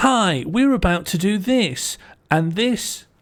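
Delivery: very slow announcer voice. Mocking a travel video presenter's greeting: imitating a Radio Four voice. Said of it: "his kind of, uh, Radio Four voice".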